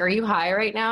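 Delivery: ordinary talk, nothing marked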